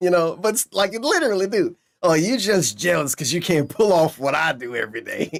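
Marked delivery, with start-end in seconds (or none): 2.0-5.4 bragging, gloating heel-wrestler manner. Mocking a streamer's boast heard in a clip: imitating DSP bragging like heel wrestler. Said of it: "he sounds like a baseball player bragging".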